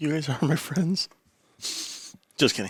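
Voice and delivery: soft, downcast, deflated, sad-sounding delivery. Asked whether they throw Halloween parties with friends, the speaker answers: sad. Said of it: "Why do you sound so sad?".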